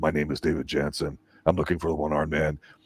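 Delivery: dead-tired, soft, flat, worn-out monotone. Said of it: "he always talked like this".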